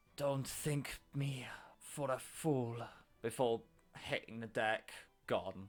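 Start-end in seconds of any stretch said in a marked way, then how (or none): 0.1-2.7 whispering, much slower. With all his strength, he leans up to your ear, whispering. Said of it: "in your ear he whispers".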